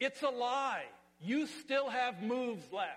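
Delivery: play-acted loud, high-pitched shout. Describing Jesus looking at our lives and calling out: imitating a shout. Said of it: "and he shouts".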